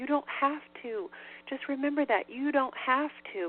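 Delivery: put-on begging tone. Retelling someone's advice, imitating a pleading tone. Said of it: "using this pleading tone".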